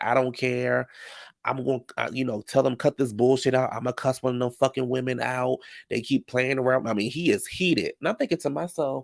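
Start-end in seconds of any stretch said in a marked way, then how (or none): none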